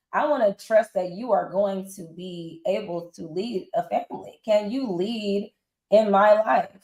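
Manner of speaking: ordinary talk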